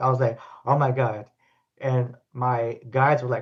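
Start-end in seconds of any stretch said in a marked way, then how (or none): 0.6-1.2 acted-out panic, imitated panicked voice. Retelling sensing a being in the pool with her: retelling own panic. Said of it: "I started to panic".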